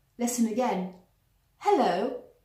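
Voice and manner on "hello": hello with stress on the first syllable, hel. Showing a ta-ta rhythm in a word: stress on HEL-lo. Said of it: "words stressed on the first syllable, such as hello".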